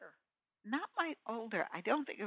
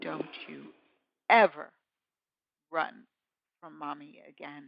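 low, dead-serious, grave tone; 4 semitones lower than usual. A mother retells warning her runaway daughter, retelling a serious warning. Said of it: "she knew I was so serious".

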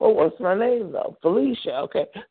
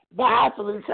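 ordinary talk

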